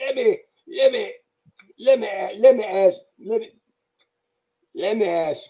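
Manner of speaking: high-pitched, halting buildup, repeatedly restarting. Retelling a coach's long question buildup: John Thompson impression. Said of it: "and he'd go".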